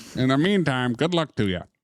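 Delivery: imitated Chicago accent. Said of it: "'Cause Maze's Chicago accent?".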